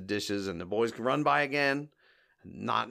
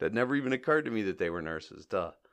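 usual speaking voice

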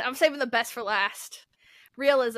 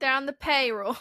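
horrible, badly done put-on New York accent. In a joking exchange about being found out, in a horrible New York accent. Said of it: "That was my horrible New York impression".

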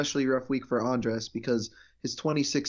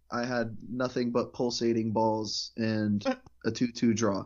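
plain

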